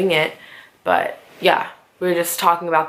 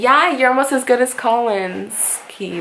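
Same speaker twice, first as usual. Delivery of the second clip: high, tongue-in-cheek, acted sarcastic tone; 7 semitones higher than usual. Retelling a remark made after magic tricks: imitating Mel being sarcastic. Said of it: "being sarcastic".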